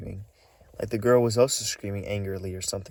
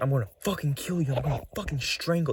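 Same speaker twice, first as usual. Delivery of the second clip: put-on man's scream, higher; 5 semitones higher than usual. Retelling a man heard arguing with a woman: imitating a man screaming. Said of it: "They were screaming and arguing".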